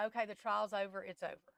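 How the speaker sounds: ordinary talk, nothing marked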